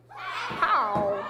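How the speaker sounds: put-on old west cowboy character voice. Saying a name after being asked to say it like a cowboy: cowboy voice. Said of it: "Say it like you are a cowboy".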